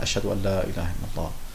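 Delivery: soft murmur under the breath, to oneself. Demonstrating the prayer, the next phrase said quietly, audible only to oneself. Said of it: "dann sagt man leise für sich selbst, so dass man sich nur selbst hören kann".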